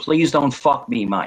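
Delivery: acted crying with a pleading, tearful tone. Speaker acts out a man on the floor begging him, mock crying and pleading. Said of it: "He'd be on the floor crying, saying".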